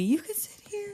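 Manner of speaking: timid, meek, very high, soft voice. Retelling a scene, voicing Bonnie offering a seat: meek Bonnie voice. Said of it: "And Bonnie very meekly".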